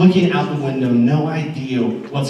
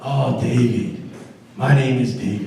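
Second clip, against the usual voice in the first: imitated Caribbean accent. Retelling what a drunk man on the street said: imitating a caribbean accent. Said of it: "He kinda had a Caribbean accent".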